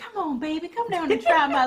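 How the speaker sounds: put-on auntie voice, high and loud. Mocking a fast-food commercial that tries to sound homey: imitating a commercial's auntie voice. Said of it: "this your auntie talking".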